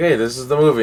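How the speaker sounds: ordinary delivery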